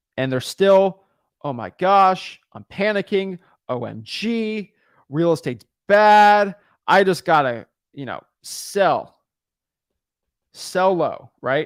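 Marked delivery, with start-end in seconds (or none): none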